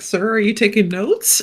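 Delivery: put-on sassy tone. Voicing a sassy question as a joke during the game: put-on sassy tone. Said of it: "my brain immediately has to be sassy and be like".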